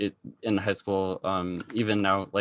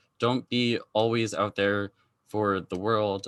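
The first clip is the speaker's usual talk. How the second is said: ordinary talk, nothing marked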